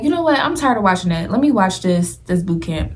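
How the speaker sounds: ordinary talk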